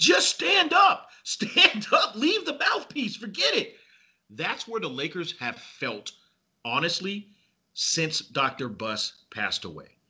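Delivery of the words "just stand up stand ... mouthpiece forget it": shrill, very high, acted-out screaming. Retelling watching a boxer fumble on the canvas: retelling a scream. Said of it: "I remember just screaming".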